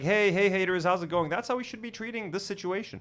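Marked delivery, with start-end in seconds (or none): 0.0-1.3 mock flippant, carefree tone. Imitating someone not taking the situation seriously: imitating a flippant greeting. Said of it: "not taking it seriously".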